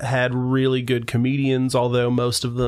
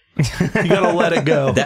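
plain

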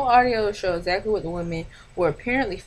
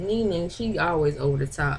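ordinary talk

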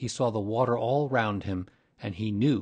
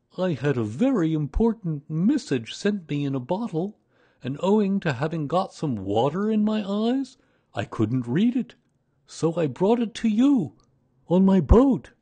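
pleased, proud tone, raised and pitched up; 8 semitones higher, 5 dB louder than usual. Narrating, the bear answers the boy's question: proudly. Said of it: "With these proud words".

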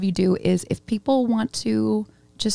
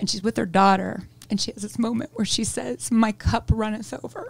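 choked-up voice. Describing a scene from an old 90s movie, getting choked up. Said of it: "I'm getting choked up".

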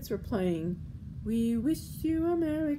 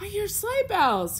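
sudden, very high cry; 11 semitones higher, 5 dB louder than usual. After bagging the coyote, Jose suddenly cries out to Juan and Josefina. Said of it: "cried Jose suddenly".

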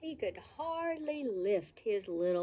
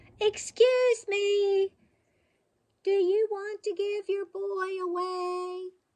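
very loud, very high-pitched, courteous shout; 12 semitones higher, 8 dB louder than usual. Narrator reading a character calling across the street: polite shout. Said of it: "shouted at the top of his lungs, but polite as could be".

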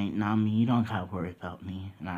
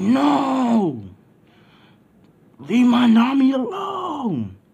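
very high, very loud, very slow, booming furious roar; 13 dB louder than usual. Retelling a vision that made the speaker enraged: imitating own loud angry shout. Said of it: "And I say that mad loud".

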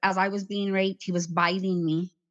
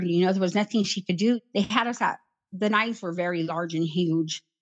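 plain

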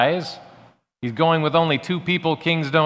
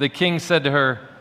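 ordinary delivery

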